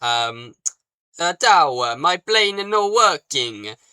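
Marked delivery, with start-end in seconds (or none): 1.4-3.7 slow, high, failed put-on Italian accent. Speaker voices the Italian Typhoon heard through the scanner, bad mock Italian accent. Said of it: "I can't do a f- bloody spaghetti accent".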